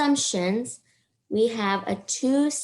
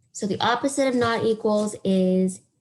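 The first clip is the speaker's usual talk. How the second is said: ordinary talk, nothing marked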